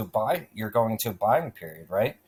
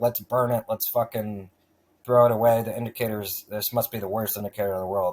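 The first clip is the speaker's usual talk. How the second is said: ordinary talk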